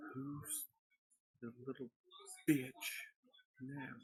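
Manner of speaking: barely audible, very quiet, soft, gentle voice. Game master voicing a voice that everyone in the room hears, soft. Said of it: "Everyone in the room hears a soft voice".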